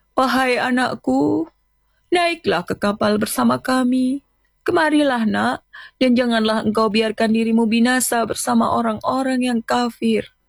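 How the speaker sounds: hoarse, raspy, imploring, pleading voice. A father on the ark calls to his son on the cliff, hoarse and pleading. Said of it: "Suaranya parau, memelas".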